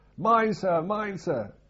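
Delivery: very high, very loud, hysterical little shriek. Retelling a story from the ship's bridge, a voice warns the captain, retelling a hysterical little shout. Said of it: "this hysterical little voice shouting".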